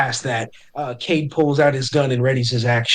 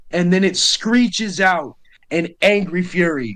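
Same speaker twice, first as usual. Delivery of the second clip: ordinary delivery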